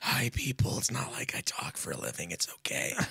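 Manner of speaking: whispered, breathy, worn-out wreck of a voice. Retelling talking all Saturday with a ruined voice: imitating his own shot voice. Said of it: "I was sitting here talking like this the whole time".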